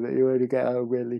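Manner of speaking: high, loud words spoken through a yawn. Tired speaker recording a video late at night, yawning mid-sentence. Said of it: "sorry, I'm yawning".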